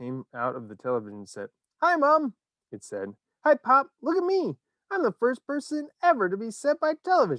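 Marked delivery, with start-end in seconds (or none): 1.8-7.4 tiny, very high little squeaky mouse voice. Reading a story aloud, a shrunken boy speaks from television: tiny squeaky voice. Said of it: "A tiny little voice, no louder than the squeaking of a mouse".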